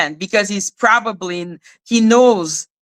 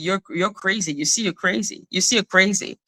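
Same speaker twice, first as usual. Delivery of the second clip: mock dead calm, soft, even, unruffled voice; 6 dB quieter than usual. Imitating how he answered a woman who was reacting: imitating a calm voice. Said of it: "that calm voice and be".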